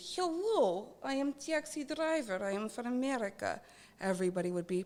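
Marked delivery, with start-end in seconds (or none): 0.2-3.6 slow, put-on Russian-accented English. Joking about showing up somewhere as a taxi driver, put-on Russian accent. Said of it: "if you show up there with a Russian accent".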